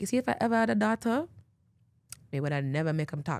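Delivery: put-on Jamaican accent. Quoting a jamaican mother's remark about her son, in a jamaican accent. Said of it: "because she's a Jamaican mother".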